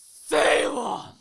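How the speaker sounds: acted stern, appalled tone. Telling how Kyle looked over at them embracing, imitating his appalled stern shout. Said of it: "with his most appalling and stern voice I've ever heard".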